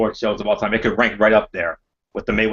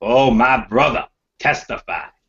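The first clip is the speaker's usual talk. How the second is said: slow, stretched-out, drawn-out put-on voice. Responding to a quoted line by doing an impression: imitating Devon. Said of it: "I gotta do my inner Devon".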